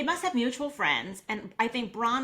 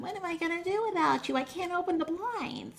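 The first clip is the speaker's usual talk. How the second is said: put-on cutesy, high-pitched baby talk; 8 semitones higher than usual. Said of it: "it's like baby voice".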